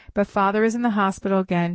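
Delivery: ordinary delivery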